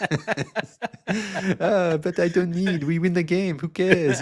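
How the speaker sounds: put-on slow, high, drawn-out French accent. Retelling what a player said about stats: Boris Diaw French accent. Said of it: "[name] speaking in a Boris Diaw French accent".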